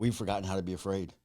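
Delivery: ordinary delivery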